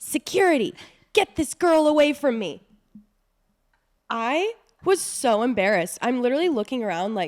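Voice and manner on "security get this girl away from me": put-on, high, all-out scream at the top of the lungs. Retelling how a boyfriend screamed for security: imitating a man screaming. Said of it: "this man screams at the top of his lungs".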